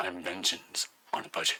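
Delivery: bad brooding masked-hero voice. Reading out a listener email quoting a line: bad Batman voice. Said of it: "Does that sound like that?".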